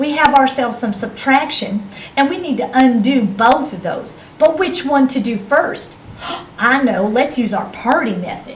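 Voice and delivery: playful Georgia Southern accent.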